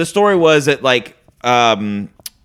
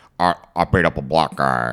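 put-on Irish accent, lower and quieter; 11 semitones lower, 4 dB quieter than usual. Imitating Liam Neeson telling the story: Liam Neeson impression. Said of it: "is that your Liam Neeson?".

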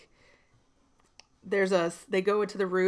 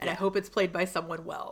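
plain

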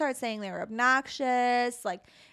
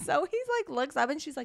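ordinary talk, nothing marked

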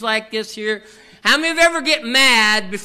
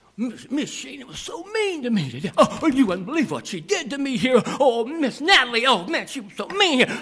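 put-on child's complaining voice; 2 semitones higher, 3 dB quieter than usual. Retelling what kids say at home about a teacher: imitating a child complaining. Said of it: "when the kids go home and say".

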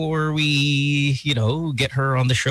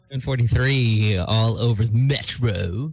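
put-on vampire voice; 4 semitones lower than usual. Radio host on air, using the voice kept for radio clichés: Dracula voice. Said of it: "you use that voice in".

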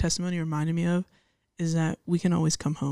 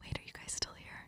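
speaking in a whisper. Coming back after the goodbye to ask if the others are still here: whispering. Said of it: "are we whispering?".

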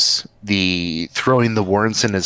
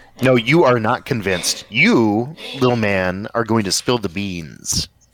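simmering with anger, seething, threatening tone; 2 semitones higher than usual. Interrogating a captured man who begs to be let go, seething. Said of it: "doing this in a very seething way".

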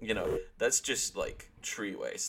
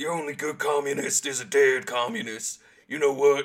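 loud, high, put-on American accent, mock shtick; 5 semitones higher, 7 dB louder than usual. Recalling chatting to people while friends were dressed up, put-on american accent. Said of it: "I was doing this whole like mega like anti-communist like American shtick".

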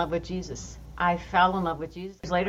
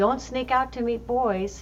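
put-on light, playful, high, drawn-out teasing tone; 6 semitones higher than usual. Speaker retelling what a woman said teasingly as the speaker was leaving: retelling a teasing remark. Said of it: "she said teasingly".

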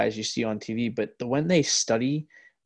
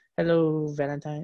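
put-on mumbled, drunk-sounding baby voice; 5 semitones higher than usual. Describing how an actor talks while standing on his bike, Adam Sandler mumbling baby voice. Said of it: "Billy Madison's like drunk baby voice".

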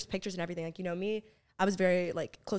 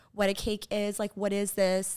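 ordinary talk

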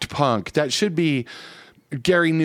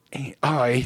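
angry, annoyed, irritated tone; 2 semitones lower than usual. Answering the other speaker's puzzled question, angry. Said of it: "You sounded so angry".

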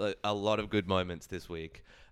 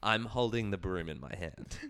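put-on deadpan, slower. Retelling a TV moment, the speaker quotes Richie deadpanning to the camera: mock-deadpan as Richie. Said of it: "deadpans to the camera".

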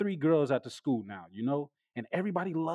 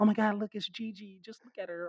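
mock whisper, much higher pitch; 5 semitones higher than usual. Describing students on campus as they walk by, imitating students whispering. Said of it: "everybody's still whispering like".

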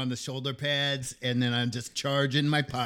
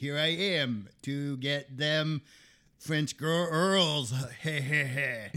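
clumsy, bad put-on French accent. Asked how he would do a bad french accent, answering in a bad french accent. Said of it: "How would you do a bad French accent".

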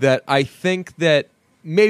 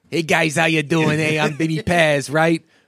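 teasing, needling, mocking delivery. Retelling someone mocking Vinny Paz on the red carpet: mocking Vinny Paz voice. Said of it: "he would pop up behind them and pretty much mock".

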